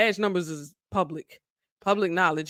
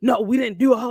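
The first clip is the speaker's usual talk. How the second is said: put-on irate voice, higher, louder; 4 semitones higher, 4 dB louder than usual. Retelling an officer's reply to a mother asking about her son, imitating an irate officer. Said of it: "starts getting irate with her".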